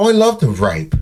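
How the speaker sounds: put-on British accent. Retelling what a man said, imitating him in a cool British accent. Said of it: "He said in that cool British accent".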